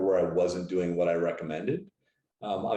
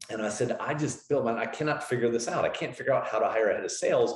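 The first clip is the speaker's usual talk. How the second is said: ordinary delivery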